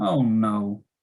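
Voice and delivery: sorrowful, sad, downcast tone. Demonstrating a reaction to someone saying they're sick and can't come: sad. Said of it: "if you feel sad".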